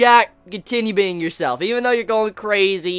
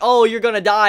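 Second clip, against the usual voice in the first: put-on taunting laughter while speaking. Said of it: "Ashy was just sitting there laughing".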